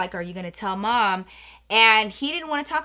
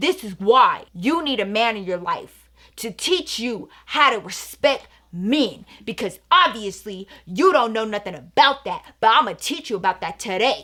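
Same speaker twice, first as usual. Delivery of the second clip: put-on, worked-up, indignant, upset, lecturing rant. Retelling what an upset man said to the speaker's brother: retelling an upset rant. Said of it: "Pablo got so upset and he was like".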